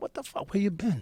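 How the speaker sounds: irritated tone that stays friendly and nice. Retelling greeting someone who asked for a hug: imitating own annoyed tone. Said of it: "Like, I'm annoyed".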